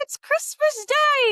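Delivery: put-on very high, loud young boy's voice. Voicing a small boy answering from the street: little boy voice. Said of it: "And the little guy goes".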